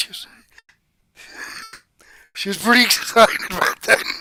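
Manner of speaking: emotional, choked-up voice catching, near tears. Speaker talking about their five-year-old, getting choked up. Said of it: "I'm getting choked up here".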